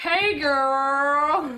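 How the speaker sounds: put-on loud, high, drawn-out, girlish Alabama accent. Retelling how people at bars greeted the speaker, in an Alabama accent. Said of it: "Alabama accent".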